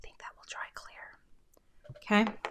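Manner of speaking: whispering quietly. Speaker gluing a craft project talks to the camera, whispering. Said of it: "I'm whispering so that nobody".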